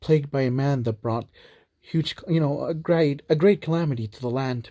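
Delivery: plain reading voice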